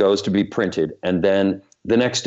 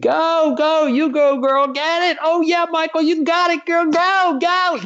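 put-on very high, drawn-out whooping cheering screams. Retelling how everyone cheered while watching the footage: imitating people screaming cheers. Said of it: "People were screaming".

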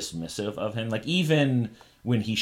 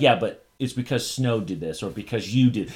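plain

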